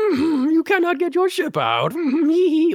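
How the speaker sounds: goofy, very high voice with swooping pitch. Quoting a favorite film scene: goofball Yoda voice. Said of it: "my favorite Yoda is goofball Yoda".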